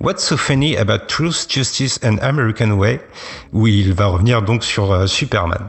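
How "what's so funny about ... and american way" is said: finest put-on English accent. A french speaker quoting a comic book line, in his best english accent. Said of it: "je vous le dis avec mon plus bel accent anglais".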